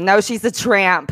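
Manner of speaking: slow, drawn-out put-on motherly voice. Joking about an app that speaks in your mother's voice: imitating a mother's voice. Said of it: "it'll start speaking in your mother's voice".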